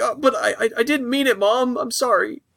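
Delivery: high, sheepish, apologetic stammering.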